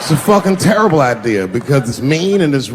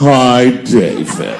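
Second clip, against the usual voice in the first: low, cat-like talking voice; 4 semitones lower than usual. Imitating the wife's friend greeting him, talking like a cat. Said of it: "talks to me the way a cat would speak".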